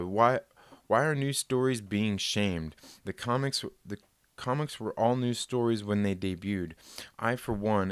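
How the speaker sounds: ordinary talk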